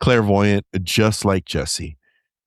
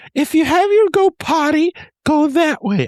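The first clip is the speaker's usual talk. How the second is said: put-on cartoon mouse voice; 5 dB louder than usual. Retelling what the woman leading the group said: Mickey Mouse voice. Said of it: "I'm Mickey Mouse".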